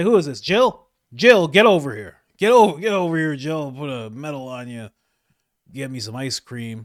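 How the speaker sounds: very loud, booming calls, hollered at full blast. Mocking a video of Joe Biden giving a medal: imitating Joe Biden. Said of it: "He's like".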